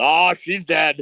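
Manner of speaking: acted yelling. Retelling what was yelled when she landed: retelling own yell. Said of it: "I can't be the only person that yelled".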